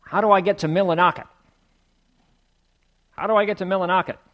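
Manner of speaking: put-on loud, superior, condescending city-slicker New York accent. Retelling a story, speaker quotes a condescending stranger addressing an old-timer in a New York accent. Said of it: "with his New York accent".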